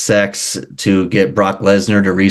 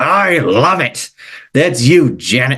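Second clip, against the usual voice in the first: put-on wrestling promoter voice, pitched higher; 5 semitones higher than usual. Reading out text messages aloud on request: Vince McMahon voice. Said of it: "Vince McMahon impression".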